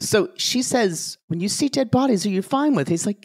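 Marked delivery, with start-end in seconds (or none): 1.3-2.9 high, quick put-on British accent. Speaker quotes the question she asked him, in a put-on accent. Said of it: "yes, we're going to do accents".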